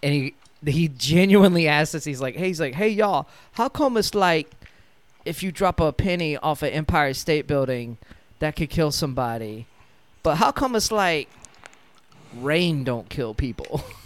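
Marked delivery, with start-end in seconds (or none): 2.7-13.8 sincere, confused character voice. Retelling a coworker's question in a Bobby Boucher style of talking. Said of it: "think kinda like Bobby Boucher style of talking".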